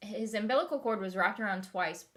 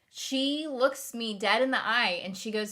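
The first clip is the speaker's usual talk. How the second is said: normal talking voice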